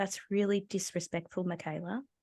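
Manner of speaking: very quiet, hushed, low-key murmured delivery. Retelling a dispute over a moved board: imitating speaking very quietly. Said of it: "very quietly said".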